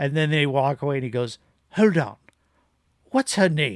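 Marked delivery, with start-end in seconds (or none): 1.7-3.8 put-on simple British accent. Retelling the last movie scene, quoting Hannibal: British accent as Hannibal Lecter. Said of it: "I do British 'cause I can't do an Anthony Hopkins accent".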